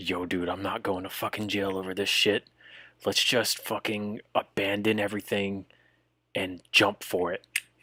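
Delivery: hushed, quiet half-whisper. Voicing a man who half-whispers a plan into another's ear: half-whispering. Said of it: "he whispers in the guy's ear".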